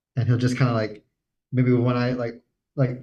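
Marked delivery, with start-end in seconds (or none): none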